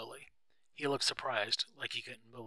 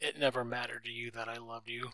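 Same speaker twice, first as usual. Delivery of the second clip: plain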